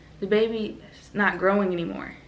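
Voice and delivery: ordinary delivery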